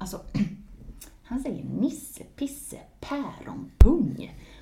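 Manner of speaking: mock awkward, reluctant, squirming, uncomfortable delivery. Retelling a woman's answer when asked what he says: mock-uncomfortable. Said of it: "skruvar ganska obekväm på sig".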